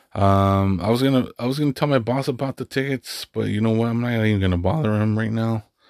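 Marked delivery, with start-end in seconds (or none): 3.9-5.6 voice cracking and breaking. Talking about monster jam tickets and not bothering the boss, voice cracking. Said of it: "My fucking voice is cracking".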